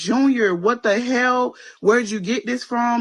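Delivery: high, sobbing, panicked, distraught tearful outburst. Retelling confronting a son over gummies, retelling screaming and crying. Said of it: "Start screaming and crying".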